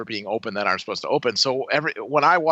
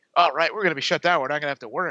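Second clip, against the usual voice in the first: giddy, gleeful, delighted chattering voice; 2 semitones higher than usual. Retelling what coworkers said about being shut down: imitating gleeful coworkers. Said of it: "the glee in their voice".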